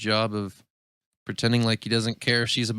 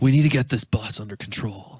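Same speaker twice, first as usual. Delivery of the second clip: put-on laid-back surfer dude voice. Doing a Keanu Reeves impression again when asked: surfer dude voice. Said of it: "That's not any better".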